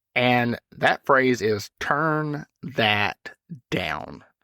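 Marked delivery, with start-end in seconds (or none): 1.8-4.1 condescending, talking down, simple dumbed-down delivery. Showing how a phrase used a lot must be delivered: talking down, dumbed down. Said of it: "I have to deliver it like that, by the way. I have to dumb it down".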